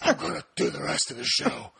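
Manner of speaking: silly put-on superhero voice. Host announces doing the rest of the show in a Batman voice. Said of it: "This stupid voice".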